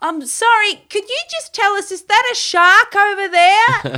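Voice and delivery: calling far, very high and very loud. Retelling how the speaker's sister called to a yelling man: retelling a call-out. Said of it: "she just calls out".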